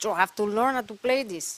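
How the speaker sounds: put-on Latin American accent. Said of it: "in his Ricky Ricardo accent".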